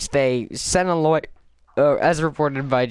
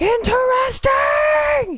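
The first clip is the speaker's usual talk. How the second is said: very high, heavily emphatic put-on voice; 4 dB louder than usual. Imagining how the other speaker said a word: Skullface voice. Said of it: "like Skullface".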